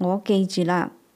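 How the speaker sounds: plain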